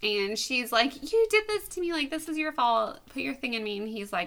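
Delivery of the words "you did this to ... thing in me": mock pleading, begging, blaming delivery. Retelling a scene where she starts begging him: imitating a character begging. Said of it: "So she starts begging him".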